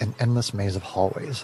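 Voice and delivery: ordinary delivery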